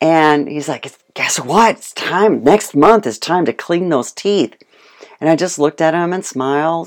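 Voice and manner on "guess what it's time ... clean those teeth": eager, delighted, all-excited, gleeful voice. Retelling what the vet told the speaker about the animals: imitating the vet, all excited. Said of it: "he was like all excited".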